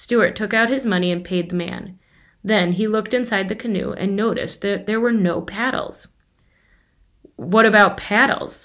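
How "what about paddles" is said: sober, businesslike, matter-of-fact tone. Narrator reads Stuart asking the storekeeper about the canoe: businesslike voice. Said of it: "making his voice sound businesslike".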